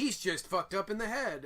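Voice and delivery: ordinary talk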